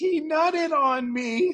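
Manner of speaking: mock crying, very high, slow and drawn out. Retelling a woman collapsing in a parking lot on video, imitating a woman crying. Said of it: "she's crying".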